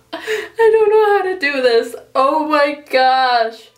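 speaking through laughter. Talking to viewers while making a video, laughing while talking. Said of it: "I'm laughing at this".

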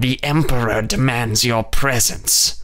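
raspy, harsh rasping voice. Narrator reading the line of a creature that approached them, rasping. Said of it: "it rasped".

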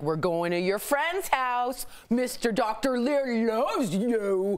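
put-on pet-talk dog voice. Retelling how they talked to their dog, doing the dog voice. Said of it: "you do the dog voice".

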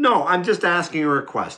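loud, high swooping voice. Arguing with another person over what she believes: raised voice. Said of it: "And raising your voice".

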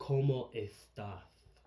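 put-on lisping Spain Spanish accent. Retelling a joke about how spain says hello: imitating a spanish lisp. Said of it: "you say it with a lisp".

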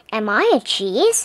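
ordinary delivery

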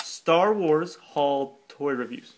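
drawn out, slow, deliberate, word by word. Asked to say it again slower, the speaker repeats it, said slower. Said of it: "say that slower".

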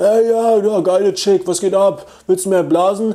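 loud, high-pitched yelling.

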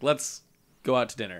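ordinary talk, nothing marked

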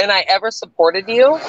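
ordinary talk, nothing marked

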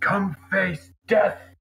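loud, high-pitched shout. Speaker voices what their character will shout into the cave: shouting a battle challenge. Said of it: "Lehman will just shout in the cave".

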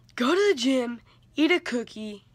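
loud yelling shout. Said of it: "the teacher yelled at me".

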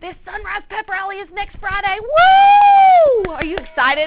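very loud, high-pitched, hyped-up excited shout. Making announcements over a microphone, excited yelling into the microphone. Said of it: "I'm yelling in the microphone because I'm really excited".

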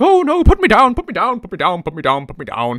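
loud, swooping talking-skull character voice. Describing a talking skull as a tentacled thing comes at him, Boney the talking skull voice. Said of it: "a talking skull who talks a bit like this".

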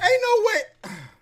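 high voice, cracking and shooting way up. Reacting to something, voice cracking. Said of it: "Y'all hear my voice cracking".

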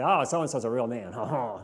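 slow, very bad, fake French accent. Speaker jokes about what french people don't say, in a bad french accent. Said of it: "That was the worst French accent ever".

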